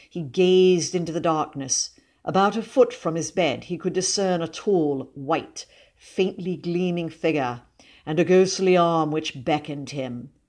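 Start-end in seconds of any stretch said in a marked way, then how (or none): none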